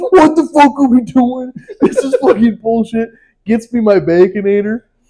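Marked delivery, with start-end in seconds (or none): 0.1-3.1 high, furious, enraged ranting scream. Retelling how the guy behind the window yelled at his coworker, imitating someone screaming. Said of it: "starts screaming at his coworker".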